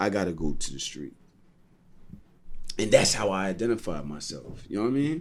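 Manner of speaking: soft voice, emotion catching in the throat. A speaker recalling something that happened in childhood, choked up. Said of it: "I'm getting a little choked up".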